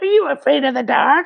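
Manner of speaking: very high, squeezed, rough and creaky voice. Imagining a spooky host at the end of the credits: Crypt Keeper voice. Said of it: "the Crypt Keeper coming in at the end and going".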